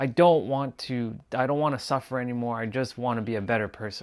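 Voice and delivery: near-tearful, desperate, pleading begging tone. Retelling begging God for help, retelling a desperate plea.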